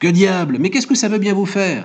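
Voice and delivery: sudden, high, explosive angry outburst. After others keep insisting on an answer, the narrator finally replies, exploding in an outburst.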